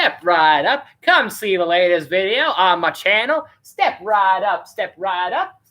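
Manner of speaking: put-on old-timey fairground carnival barker voice. Streamer inviting viewers to the latest video, in an old-timey carnival barker voice. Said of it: "like fair guys from the carnival".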